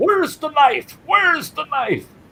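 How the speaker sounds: very high-pitched yelling. Retelling how police officers questioned the brother: imitating cops yelling. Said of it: "they're yelling at him".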